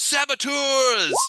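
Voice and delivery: very high, yelled, alarmed shout. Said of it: "this guy's like".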